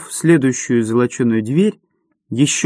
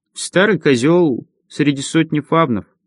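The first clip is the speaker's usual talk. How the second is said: usual speaking voice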